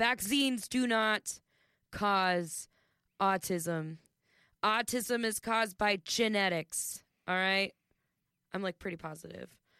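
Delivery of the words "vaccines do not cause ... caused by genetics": very slow, emphatic, deliberate, a bit louder. Announcing a point to listeners at the back: saying it louder. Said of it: "I'm going to say it a little louder".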